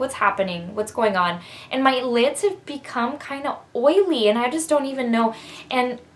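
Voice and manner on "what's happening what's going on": usual speaking voice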